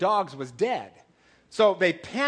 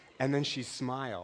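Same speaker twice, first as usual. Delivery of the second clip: normal talking voice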